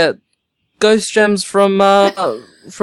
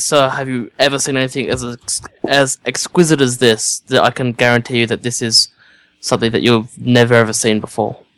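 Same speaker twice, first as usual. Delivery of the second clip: hushed, confiding, quiet tone; 8 semitones lower than usual. Presenting a gem to a man in a chair, the character speaks in a hushed tone. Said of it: "in a hushed tone".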